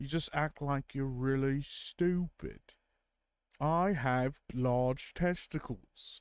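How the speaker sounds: terrible, slow Brummy accent, sounding dim. Trying out a Brummy character after chat praised the accent: terrible Brummy accent. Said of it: "that was terrible".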